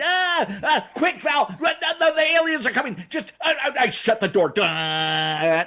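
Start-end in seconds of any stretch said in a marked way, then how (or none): 0.0-3.0 put-on very high, frantic, panicked alarm. Acting out a planned movie scene at a ship's open door: acting out panic. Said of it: "I'm panicking".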